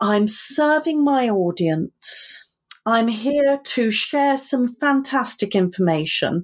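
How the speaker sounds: over-the-top, theatrical, dramatic diva delivery. Coaching listeners, the speaker demonstrates what to start saying: theatrical, dramatic, diva-like. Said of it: "I'm going to be very theatrical and dramatic, diva-like".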